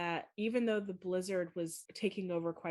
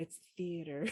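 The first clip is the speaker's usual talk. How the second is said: put-on whispering voice. Retelling how a listener corrects a pronunciation to herself: imitating Em whispering. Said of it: "she'll whisper to herself".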